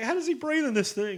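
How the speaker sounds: very high, flipped-up comic voice. Describing a film scene, imitating the unmasked character: Rick Moranis as Dark Helmet. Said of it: "and it's Rick Moranis, and he's like".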